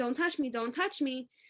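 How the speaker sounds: usual speaking voice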